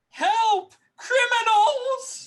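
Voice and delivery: very high, shrill, full-out top-of-lungs scream. In a role-play game, a character yells to wake the crew, yelling at top of lungs. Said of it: "I'm going to yell at the top of my lungs".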